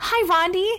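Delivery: bright, cheerful, happy, very high-pitched voice. In a read-aloud story, a returning schoolgirl greets her classmate: happily. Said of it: "she said happily".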